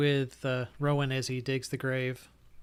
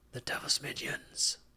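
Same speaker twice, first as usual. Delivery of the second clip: very quiet, hushed, breathy, barely voiced whisper. Narrating a game scene, the storyteller voices Donovich seeing the wolves, whispering. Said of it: "he looks at you and he whispers".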